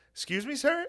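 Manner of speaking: very high-pitched put-on lady voice. Acting out an imagined barbershop chat, imitating some lady. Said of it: "Just some lady like".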